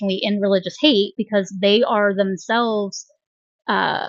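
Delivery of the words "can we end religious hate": normal talking voice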